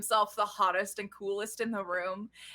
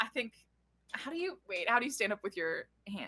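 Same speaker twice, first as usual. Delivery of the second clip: normal talking voice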